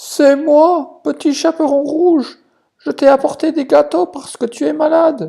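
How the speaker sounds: very high disguised falsetto voice. Reading the wolf's reply at Grandma's door: wolf disguising his big wolf voice. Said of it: "essayant de cacher au mieux sa grosse voix de loup".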